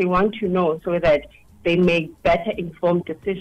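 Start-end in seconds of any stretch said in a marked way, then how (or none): none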